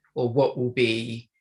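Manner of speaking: ordinary talk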